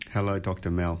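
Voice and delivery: very low, flat, dead-level monotone drone. Guest greeting the radio host on purpose, very monotonous. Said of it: "By being very monotonous".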